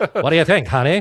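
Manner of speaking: put-on old-time 1920s radio voice. Repeating the other speaker's question back to him in a 1920s radio voice. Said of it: "that nineteen twenties radio voice".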